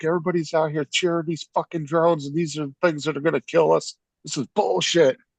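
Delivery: mock, high, furious screamed rant. Retelling how a man at a drone show ranted: imitating a man screaming. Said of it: "And he starts screaming".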